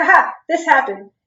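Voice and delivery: play-acted sarcastic, joking, throwaway tone. Retelling own past joke after admitting to cheating: imitating own sarcastic remark. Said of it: "I'm sarcastic about it".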